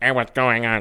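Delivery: put-on quacky, duck-like voice. Quoting a girl in the game who sounds like a duck, duck-like voice. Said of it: "that kind of voice".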